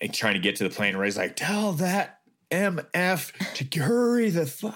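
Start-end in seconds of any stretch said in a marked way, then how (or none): 1.4-4.7 high slow annoyed yelling. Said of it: "he's in a pissy mood".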